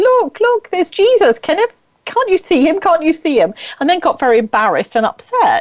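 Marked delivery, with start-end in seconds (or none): 0.0-3.5 high, full-throated, top-of-the-voice shout. Retelling seeing a figure from a bus top deck: retelling a loud shout. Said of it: "shouted at the top of my voice".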